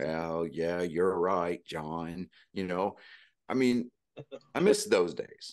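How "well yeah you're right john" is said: slow, drawn-out, steady, trying hard to sound sober. Recalling old football broadcasts: imitating Pat Summerall faking sobriety. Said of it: "best impersonation of a sober person going".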